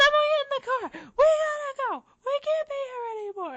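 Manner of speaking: full-on shriek, pitched way up, loud. Speaker retells how Razzle screamed at everyone to get in the car, imitating someone screaming. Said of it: "literally screaming".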